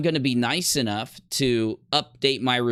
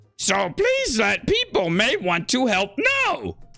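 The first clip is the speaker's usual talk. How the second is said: very high, put-on voice swooping up and down; 10 semitones higher than usual. Asked to speak it in Yoda, the speaker attempts a Yoda voice. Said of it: "you can speak it in Yoda after me".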